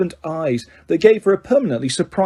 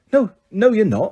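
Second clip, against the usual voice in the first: sharp, cutting tone; 4 semitones higher than usual. Narrating a girl's retort to a classmate, said sharply. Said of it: "said Ginny sharply".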